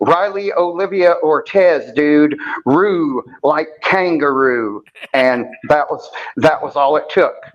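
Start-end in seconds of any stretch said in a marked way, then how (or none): 0.0-4.8 put-on, casual, slight California accent. Retelling how a woman told him her baby's name, California accent. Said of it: "in her little California accent".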